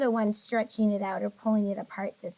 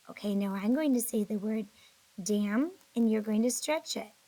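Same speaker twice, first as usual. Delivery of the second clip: normal talking voice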